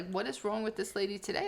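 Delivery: normal talking voice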